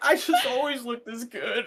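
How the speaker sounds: acted crying through words. Recalling a hospital stay, retelling a line said while sobbing. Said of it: "like sobbing in this hospital".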